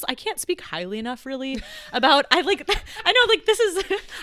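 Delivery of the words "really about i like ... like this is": high, loud, excited gushing with laughter. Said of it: "I get so excited talking about this".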